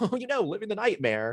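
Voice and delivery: very high, heavily sarcastic, dripping sarcasm. Retelling own reply to a coworker's greeting: imitating own sarcastic reply. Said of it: "in a very sarcastic way".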